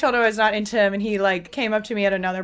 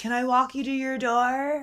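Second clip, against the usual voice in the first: put-on drunken slurring, higher-pitched; 4 semitones higher, 4 dB quieter than usual. Retelling what a drunk guy at a party asked: imitating drunk slurring. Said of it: "He was literally slurring".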